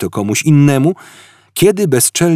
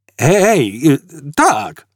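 half-yelled, mild shouting; 3 semitones higher than usual. Zafod cries out after a woman points to the exact spot, shouting. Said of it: "Krzyknął Zafod".

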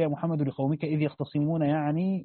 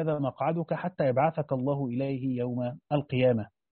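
plain

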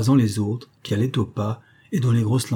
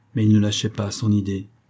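plain reading voice

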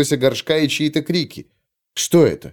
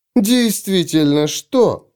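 scornful, mocking tone; 4 semitones higher than usual. Phryne answers a young man's complaint, mocking. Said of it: "с насмешкой спросила Фрина".

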